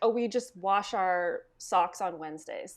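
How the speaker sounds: plain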